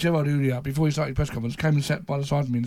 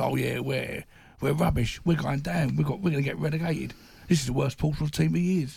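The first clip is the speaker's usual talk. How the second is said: mock, tongue-in-cheek sarcastic tone. Retelling a man's sarcastic answer to a question, as a mock sarcastic answer. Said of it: "he goes on this sarcastic answer".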